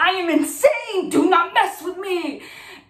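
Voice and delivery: play-acted half-scream, kept small, mild, held-back. Retelling a car chase, repeating own words: imitating own screaming. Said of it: "and I'm screaming".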